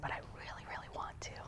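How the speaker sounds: little, soft, unvoiced inner-voice whisper.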